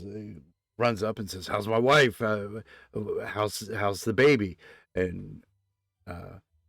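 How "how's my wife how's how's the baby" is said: ordinary delivery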